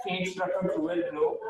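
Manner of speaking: plain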